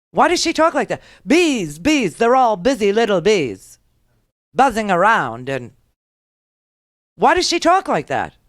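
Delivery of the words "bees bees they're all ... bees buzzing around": put-on old Hollywood mid-Atlantic film accent. Mocking how a spiritual guide talks, imitating a 1940s mid-Atlantic accent. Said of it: "she's got that uh, nineteen forties movie accent".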